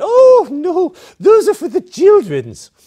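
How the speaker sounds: put-on shrill, very high, booming, sing-song Swedish accent. Retelling what an old woman said while grabbing the speaker's arm, in a Swedish accent. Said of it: "in this Swedish accent said".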